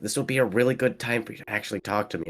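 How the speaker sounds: fast, hushed stage half-whisper. Retelling what he half-whispered to himself during a competition: retelling a half-whispered aside. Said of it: "I whisper to myself".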